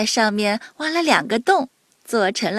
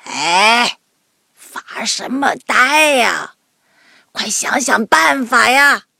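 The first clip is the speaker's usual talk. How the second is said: put-on loud, raspy, halting old woman's voice; 5 dB louder than usual. Reading a story aloud, voicing a character's line in a hoarse voice. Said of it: "一个沙哑的声音".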